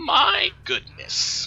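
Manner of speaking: put-on very high, swooping, croaking old-hag voice. Narrating a scene, the speaker voices a hag staring at a group: croaking hag voice. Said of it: "the hag croaks".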